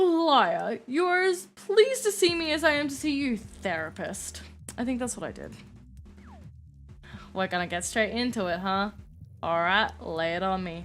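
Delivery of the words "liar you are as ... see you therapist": loud, swooping, overdone put-on posh accent. Redoing a character line meant to sound Italian, with too posh an accent. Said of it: "I gave her too much of a poshy accent".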